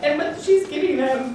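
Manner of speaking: high, choked-up voice, words pushed through tears. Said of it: "Take a breath".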